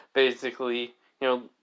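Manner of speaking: plain reading voice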